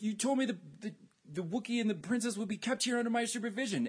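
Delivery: high, whiny voice, drawn out and put-upon.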